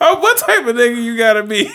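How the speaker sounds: high-pitched, loud, incredulous laughing outburst.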